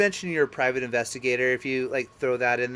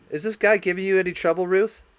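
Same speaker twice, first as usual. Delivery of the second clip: big authoritative officer voice, pitched up; 6 semitones higher, 4 dB louder than usual. Voicing an officer from the back room who asks Ruth about trouble: voicing the officer. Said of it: "An officer walks out".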